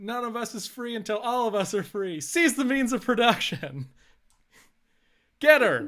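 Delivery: very loud, shrill, high rallying shout. A role-play character, living up to a role of overthrowing tyrants, gives a rallying shout. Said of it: "And I'm going to shout".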